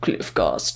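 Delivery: dismissive, careless whispered character voice. Retelling how Yorick brushes off the creature, in a Yorick voice. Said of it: "don't laugh at my Yorick".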